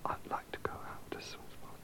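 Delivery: fast, soft whisper.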